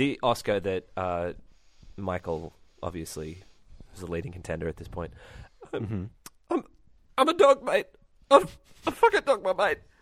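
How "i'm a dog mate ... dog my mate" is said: whimpering voice, much higher pitch and louder. Getting into character, an actor tries the line whimpering. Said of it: "This is kind of whimpering".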